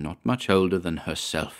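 ordinary talk

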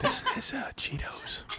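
very high, soft, close-mic ASMR whisper. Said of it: "eat and whisper the entire episode".

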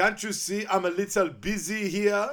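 put-on shrill, booming, belted creepy French accent. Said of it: "Really creepy French accent".

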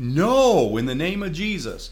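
very slow, high, top-of-the-lungs screaming. Recounting a moment when a girl was floating in the water, retelling a scream. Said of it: "screaming to the top of my lungs".

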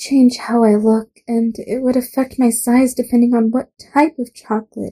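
ordinary delivery, nothing marked

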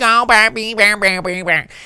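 very high, heavily exaggerated Southern accent. Describing Margaret Qualley's movie character, the speaker mimics her: exaggerated Southern accent as Jamie. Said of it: "she gonna talk like this all the time".

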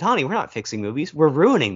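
ordinary talk, nothing marked

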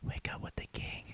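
very soft, close, breathy whisper. Acting out a man sneaking up to whisper in your ear, whispering. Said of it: "whispers in your ear".

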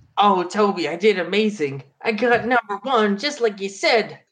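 put-on high, eager, dorky nerd voice. In a role-play, the boy reports his result; nerd voice. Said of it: "I can't do nerd voice".

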